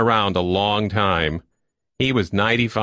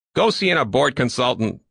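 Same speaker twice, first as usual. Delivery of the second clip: irritated, irritable call pitched higher; 5 semitones higher than usual. A man calls after a couple leaving his office: called irritably. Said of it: "Lackmore called after them irritably".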